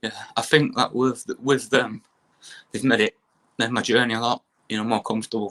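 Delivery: emotional, close to tears, welling-up voice. Talking about the support of family, wife and kids: welling up, tearful. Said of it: "I'm welling up a little bit".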